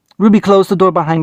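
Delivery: ordinary delivery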